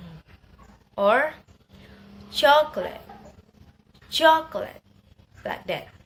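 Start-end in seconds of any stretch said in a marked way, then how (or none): 2.3-4.8 chocolate with CHOC loud, rest light and unstressed. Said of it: "primary stress in the first syllable".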